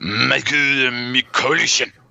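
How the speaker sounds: slow, careful, deliberate put-on Japanese accent. Pronouncing a listener's name for fun: put-on japanese accent. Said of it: "I'm gonna do it with a Japanese accent".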